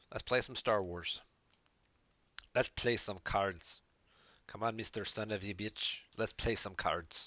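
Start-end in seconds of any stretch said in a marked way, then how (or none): 4.5-7.3 vague put-on Irish accent. Calling someone to play a card game, in an accidental Irish-ish accent. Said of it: "It kind of came out like Irish".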